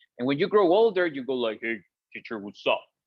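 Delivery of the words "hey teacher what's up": deeper, low, soft grown-up speaking voice. Showing how an older kid talks to a teacher: deeper grown-up voice. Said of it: "So deeper voices".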